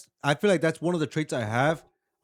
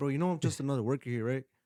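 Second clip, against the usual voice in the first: put-on passive-aggressive tone, much quieter; 2 semitones lower, 6 dB quieter than usual. Retelling what he says to someone in front of everybody, mock passive-aggressive. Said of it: "Like passive aggressive with them".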